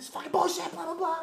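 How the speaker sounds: acted very high, angry screaming rant. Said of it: "this guy was screaming at me".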